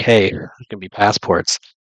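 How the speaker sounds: ordinary delivery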